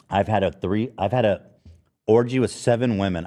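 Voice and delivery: ordinary talk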